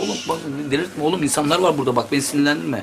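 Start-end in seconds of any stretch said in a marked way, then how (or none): none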